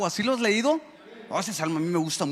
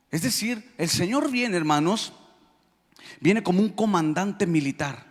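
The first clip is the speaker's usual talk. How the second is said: normal talking voice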